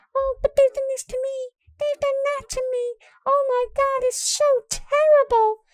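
put-on very high-pitched, little girlish voice. Speaker mimics a woman from the tweets, in Dominique Sky's little girly voice. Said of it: "in her little girly voice going".

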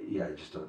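very quiet, calm, even and measured voice. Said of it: "calm, measured".

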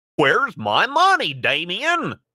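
very high, slow, swooping cartoon voice. Performing a requested line as Goofy: Goofy voice. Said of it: "As Goofy?".

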